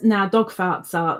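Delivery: normal talking voice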